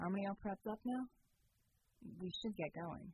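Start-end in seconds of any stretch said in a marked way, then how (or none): none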